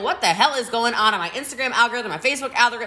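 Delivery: plain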